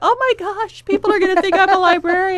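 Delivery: play-acted, very high, loud laughing disbelief. Retelling a reaction to a high school career test: retelling own past words while laughing. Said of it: "I started laughing at my friends going".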